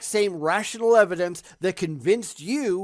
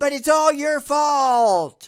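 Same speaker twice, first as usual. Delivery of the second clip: acted high wailing scream, "fault" stretched long; 7 semitones higher, 4 dB louder than usual. Mocking how someone reacts to comments: imitating someone screaming. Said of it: "he's just screaming".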